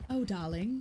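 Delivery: classic movie transatlantic accent. Showing the accent being practiced for another character: classic movie transatlantic accent. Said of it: "the classic movie transatlantic accent".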